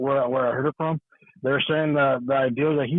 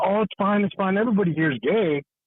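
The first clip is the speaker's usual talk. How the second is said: very loud, provoking, pitched-up put-on outburst; 6 semitones higher than usual. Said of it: "raising her voice out loud saying".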